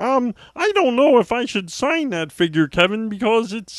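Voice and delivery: puppet-like character voice. Complaining about a man refusing to sign an action figure: Muppet-like voice. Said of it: "He sounds like a fucking Muppet. He's like".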